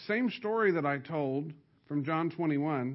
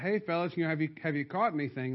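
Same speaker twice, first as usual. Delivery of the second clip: ordinary talk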